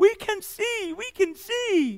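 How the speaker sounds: mock very high, stretched-out scream. The speaker acts out people screaming at Jesus, acting out a scream. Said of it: "They essentially are screaming at Jesus".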